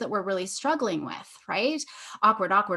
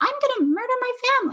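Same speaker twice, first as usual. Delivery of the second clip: very high, squeaky cartoon voice; 3 dB louder than usual. Showing kids the ridiculousness of a dark line, in Mickey Mouse voice. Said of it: "I love using a Mickey Mouse".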